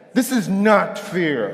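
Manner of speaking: slow, drawn-out delivery full of attitude. Speaker shows the audience how the phrase should be said: with attitude. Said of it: "You have to say it with attitude".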